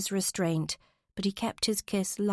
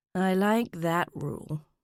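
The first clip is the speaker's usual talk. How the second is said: low, suggestive murmur. Narrator reading a man's reply to Olivia, as a suggestive murmur. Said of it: "he murmured suggestively".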